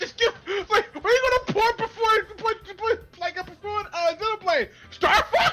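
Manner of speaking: high-pitched mock yelling. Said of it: "I was yelling this at Tevy".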